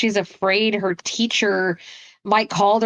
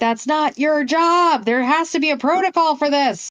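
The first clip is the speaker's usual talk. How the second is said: put-on high-pitched screaming; 6 semitones higher than usual. Retelling a reaction to a scene while watching: imitating own screaming. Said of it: "I'm screaming".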